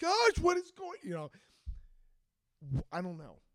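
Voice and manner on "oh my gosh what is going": very high, loud, frantic panicked freaked-out outburst. Retelling a friend's reaction to a found passport, imitating someone freaking out. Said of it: "He was, like, beside himself".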